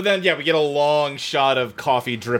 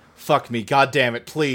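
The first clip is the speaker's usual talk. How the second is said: usual speaking voice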